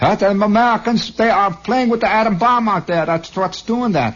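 put-on very high Middle European foreign accent. Imitating foreigners blaming the Americans: vaguely Middle European accent. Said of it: "I make all of them vaguely Middle Europa accent".

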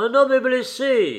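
very high cry shouted at full force. A hunter who just shot a beater calls to the shooters, shouting at top of lungs. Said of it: "cria-t-il de toute la force de ses poumons".

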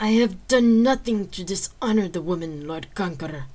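loud, forced out through gritted, clenched teeth. Narrator reads a man answering a jest, through clenched teeth. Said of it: "he said through clenched teeth".

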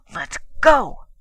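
furious, loud and high angry outburst. She speaks furiously while aiming a fast heel at his instep. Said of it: "she said furiously".

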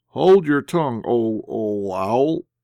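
halting, stammering, stuttering speech. Replying to the person scolding him, the narrator speaks, stammering. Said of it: "I replied, stammering".

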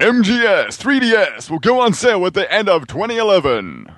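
very high, newsreader-style radio-reporter voice. Reading the next question aloud to the others, in a reporter radio voice. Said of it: "read in a reporter sort of radio voice".

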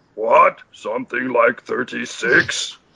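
puppet monster voice. Reading a script line with the direction to lower your voice, in a Cookie Monster voice. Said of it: "When the fuck did Cookie Monster join our pod?".

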